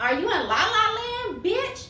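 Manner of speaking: high-pitched, mocking, incredulous tone.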